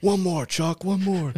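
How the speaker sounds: very high, rousing, pumped-up yell. Describing a powerlifter mid-set, the speaker imitates him yelling at himself. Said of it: "He's like yelling at himself while he's doing".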